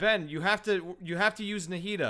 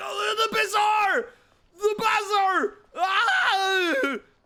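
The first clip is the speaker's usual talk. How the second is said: mock very high, very slow, drawn-out jittery thrilled awe; 7 dB louder than usual. Speaker mocking how people react to the bazaar, imitating jumpy, excited people. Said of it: "jumpy about it".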